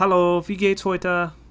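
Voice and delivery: put-on German-accented speech.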